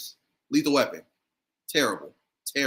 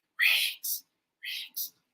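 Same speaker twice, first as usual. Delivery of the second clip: acted-out breathy mutter under the breath. Retelling saying a catchphrase as a kid after mom's warning; saying it under the breath. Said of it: "I'll try to say it with my breath".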